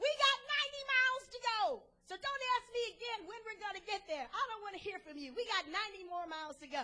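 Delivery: exasperated snap.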